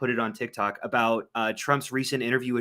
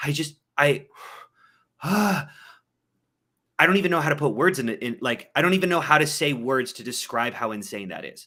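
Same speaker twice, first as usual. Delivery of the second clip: put-on stammer, tripping over own words; 3 semitones higher, 4 dB louder than usual. Retelling a TikTok clip of Biden's response: imitating Biden stuttering. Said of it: "And he kinda stutters over himself".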